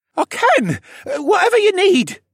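cracking voice soaring very high. Rylan answers the captain, voice cracking and soaring. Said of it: "as his voice cracked and soared".

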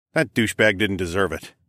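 plain reading voice

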